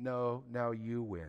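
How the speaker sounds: very slow, hushed, soft half-whisper. Acting out the Holy Spirit's reply to someone who gives up: half-whisper. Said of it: "the Holy Spirit whispers".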